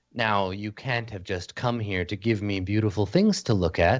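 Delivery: soft, gentle voice. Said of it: "despite her soft voice".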